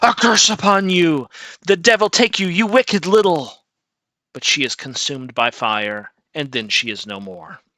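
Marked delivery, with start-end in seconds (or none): 0.0-3.5 loud, barely intelligible, agonized scream. Storyteller voicing Eurymedon as the trident strikes her, Eurymedon screaming in agony. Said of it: "She screams in barely intelligible agony".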